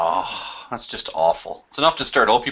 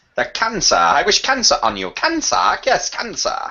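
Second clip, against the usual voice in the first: sing-song, very high, put-on English accent; 9 semitones higher, 3 dB louder than usual. Gus, in a group conversation, suddenly does an english accent. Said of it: "that was a fine English accent you did".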